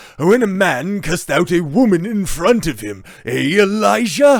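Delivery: loud, slow half-British accent. Reading out a tweet aloud: Sebastian Gorka half British accent. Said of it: "I should have my Sebastian Gorka half British accent on".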